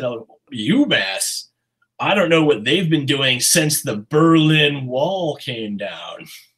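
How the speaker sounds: deliberate, slow, scornful, mocking delivery. Retelling what an econ advisor said about a program: imitating a slow mocking burn. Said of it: "slowly, like he's making this unbelievable burn".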